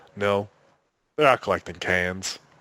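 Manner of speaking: put-on, completely deadpan, flat, dead serious. Retelling a wife's answer about where the kids are, imitating someone completely deadpan serious. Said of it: "Completely deadpan serious".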